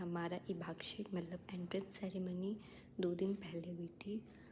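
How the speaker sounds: soft, hushed whisper.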